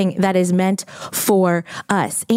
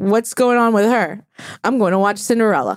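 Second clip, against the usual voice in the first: mock put-out, dismissive, annoyed yet unbothered tone. Retelling how the child reacted to mother's pain: imitating Hartford sounding annoyed. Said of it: "she just seemed annoyed that I was in pain".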